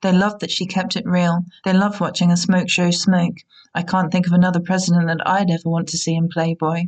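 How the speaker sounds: usual speaking voice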